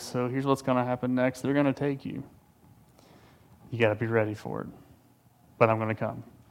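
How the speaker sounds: calm, hushed, soft, collected tone. Retelling a movie phone call scene: calm and collected Liam Neeson impression. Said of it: "Liam Neeson, calm and collected".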